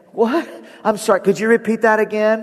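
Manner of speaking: high, baffled, confused voice. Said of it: "And you're like".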